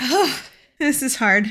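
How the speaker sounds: breaking, tearful voice, on the edge of crying. Making a scary video announcement to viewers, on the verge of crying. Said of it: "I'm gonna cry".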